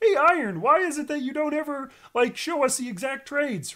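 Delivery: very high-pitched frog-puppet voice. Quoting critics asking to see the exact trades: Kermit voice. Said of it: "hate the Kermit voice".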